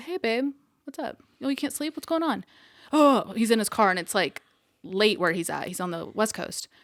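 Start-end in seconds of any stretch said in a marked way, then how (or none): 0.0-2.4 very chill, laid-back, relaxed tone, pitched up. Retelling how this guy normally answers the phone, imitating a mad chill tone. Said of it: "he's like mad chill".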